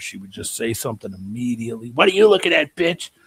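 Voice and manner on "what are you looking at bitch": put-on loud, rough-voiced Boston accent, blurted out. Retelling what a loud, swearing acquaintance snapped at people: imitating a rough Boston-accented voice. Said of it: "Boston accent, really rough voice".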